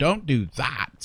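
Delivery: tiny, shrill, squeaky, complaining creature voice. Narrating a story, a tiny winged creature protests being batted away: shrill, squeaky voice. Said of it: "it complains in a shrill and squeaky voice".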